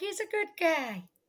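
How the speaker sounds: high-pitched, slow, stretched-out, lingering delivery. Repeating how the other speaker just said the line: imitating a friend's Jennifer Coolidge-like voice. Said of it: "Just the way you said it, you're like".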